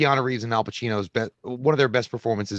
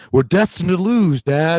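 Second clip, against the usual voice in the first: put-on raised, pitched-up, somewhat loud Southern accent; 5 semitones higher, 8 dB louder than usual. Mock Keanu Reeves speaking to Dad near the end, Keanu Reeves Southern accent. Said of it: "that stupid Southern bullshit where he was like".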